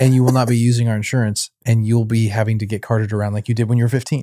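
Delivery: plain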